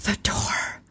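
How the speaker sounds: whispering male voice. Retelling a story, voicing a voice heard through static: whispery man's voice. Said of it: "it's a man's voice, but it's whispery".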